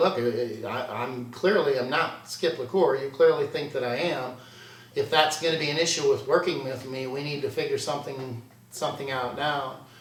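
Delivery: normal talking voice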